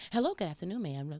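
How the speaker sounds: put-on polite, professional, service-style phone voice. Imitating someone answering a call at their job: imitating a professional work voice. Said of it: "that's your work voice".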